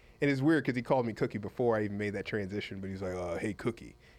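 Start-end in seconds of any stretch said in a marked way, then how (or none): 3.1-3.9 deep baritone voice. Retelling how Eddie greeted the speaker: imitating Eddie's deep baritone voice. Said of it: "Eddie had this deep baritone voice".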